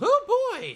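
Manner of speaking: high, loud, excited yelp.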